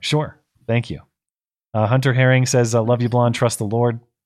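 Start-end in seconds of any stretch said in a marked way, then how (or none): none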